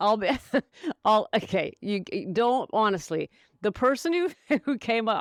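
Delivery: helpless giggles, giggly stumbling restarts. Trying to talk about the question writer, giggling while talking. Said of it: "I can't stop giggling".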